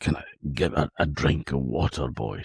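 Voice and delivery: mock feeble, faint, weak and soft voice. Retelling how a man spoke after water was splashed on his face; imitating a weak voice. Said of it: "a weak voice".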